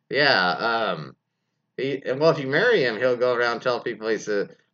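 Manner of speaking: normal talking voice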